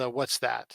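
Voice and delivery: guarded, wary, distrustful tone. Voicing a character who is offered a deal: suspicious. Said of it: "He looks suspiciously at you and says".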